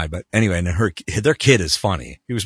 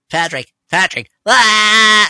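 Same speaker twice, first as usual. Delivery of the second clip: high, loud cartoonish yelling. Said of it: "I'm yelling at Patrick".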